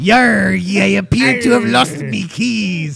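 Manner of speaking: put-on loud, growly, rough pirate drawl. Picturing another speaker's story: mocking pirate voice. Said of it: "You were acting like a pirate".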